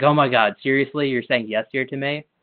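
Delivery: teasing, playful, pretend angry indignation. Retelling how the girlfriend reacted to "yes, dear": imitating play anger. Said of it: "got play angry about it".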